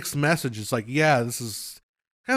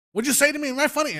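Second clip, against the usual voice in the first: put-on yelling rant, very high and shrill; 12 semitones higher than usual. Imitating a Goodfellas scene: Joe Pesci yelling impression. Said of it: "Joe Pesci as he's yelling".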